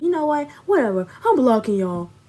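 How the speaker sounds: angry, fed-up, dismissive brush-off tone. Retelling what he said before hanging up the chat, mock-angry. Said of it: "getting mad because we was telling him".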